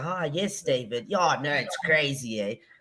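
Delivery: put-on woman's Johannesburg accent. Imitating mom answering the phone: imitating mom's switched Joburg phone accent. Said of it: "Immediate switch".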